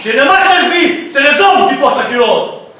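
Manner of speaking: angry shouting, high-pitched and loud.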